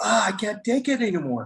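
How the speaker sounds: high, cathartic, letting-it-all-out scream. Retelling going into the water alone to let it out: imitating own screaming. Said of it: "I'll scream".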